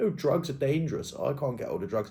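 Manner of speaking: put-on snooty, stupid la-di-da upper-class voice. Retelling what a man said about drugs, in a stupid posh voice. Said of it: "in that stupid posh voice".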